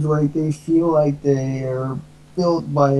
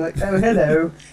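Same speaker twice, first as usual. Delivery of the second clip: put-on, kind-of-British-sounding accent; 2 semitones higher than usual. Retelling how he greeted friends when his mom introduced him, kind-of-British hello. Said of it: "it sounds kind of British".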